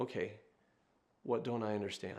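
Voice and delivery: calm, soft, humble tone. Speaker retells how a man answers a woman who says he doesn't know; retelling a calm question. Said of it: "He says calmly".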